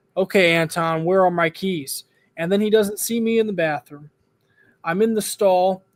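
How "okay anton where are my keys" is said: ordinary delivery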